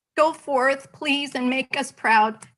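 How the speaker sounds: tearful voice, crying through the words. Speaker addressing graduates at the close of a speech, tearful, crying. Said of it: "tears running down my face".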